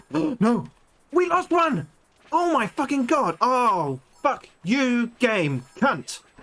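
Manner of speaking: high, furious, very drawn-out yelling. Playing a game, speaker reacts to losing a kid, shouting.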